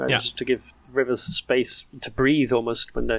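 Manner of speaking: normal talking voice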